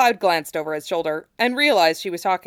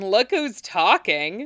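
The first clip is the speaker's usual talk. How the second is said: said through a laugh; 3 semitones higher than usual. Narrator reading her reply to Cloud, laughing. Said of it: "she laughed".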